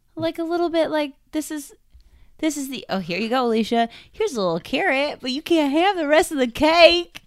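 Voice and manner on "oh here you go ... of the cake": loud put-on Southern belle accent. Discussing a team they want to learn more about, speaker does a Southern belle accent. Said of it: "What accent was that?".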